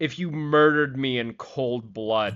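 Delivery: dead-straight, flat, expressionless deadpan delivery. Recounting answering a voice prompt, imitating their own deadpan delivery. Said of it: "And I completely deadpan".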